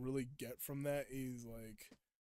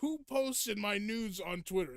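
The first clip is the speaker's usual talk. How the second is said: high-pitched, dubbed cartoon baddie voice; 7 semitones higher, 3 dB louder than usual. Listing voices he can do, quote the dubbed Eggman in the Eggman dub voice. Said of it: "the Eggman that was dubbed".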